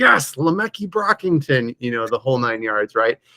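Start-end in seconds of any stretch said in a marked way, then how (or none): 0.0-1.7 high, wildly excited cheering yell. Retelling how dad yelled during a touchdown: imitating dad yelling. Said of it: "he's yelling, like".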